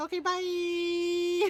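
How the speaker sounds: high-pitched cat voice, drawn out. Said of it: "she's like".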